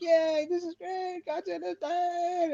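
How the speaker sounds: very high, slow, drawn-out, fake celebratory cheer. Imagining people reacting to a godzilla film: mock-celebrating cheer. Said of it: "I want them to be celebrating".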